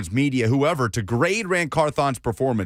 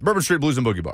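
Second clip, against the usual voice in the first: quickly rattled off, very fast. Asked to say the bar's name again, saying it very fast. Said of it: "Why are you saying it so fast?".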